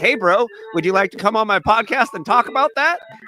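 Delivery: play-acted sweet, eager-to-please, lifted super nice voice. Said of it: "just super nicely".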